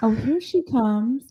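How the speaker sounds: cutting, shady reality-TV style delivery. Quoting a line from the reunion, imitating Dorit. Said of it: "Dorit is the front runner of that reunion with the".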